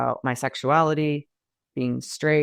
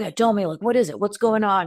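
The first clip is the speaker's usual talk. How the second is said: mock light, unserious, jovial, breezy tone, pitched up; 7 semitones higher than usual. Retelling how a man sitting in his chair spoke to the speaker, in a mock-jovial casual tone. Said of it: "being all like kind of jovial and like not so serious".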